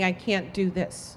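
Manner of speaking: put-on tearful speech. Retelling what you said after hearing your baby's heartbeat: retelling crying speech. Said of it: "I started crying and saying".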